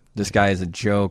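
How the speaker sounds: usual speaking voice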